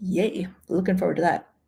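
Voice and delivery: enthusiastic tone that comes out sarcastic. Reacting to a changed cruise plan: kinda sarcastic. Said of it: "I know that sounded kinda sarcastic".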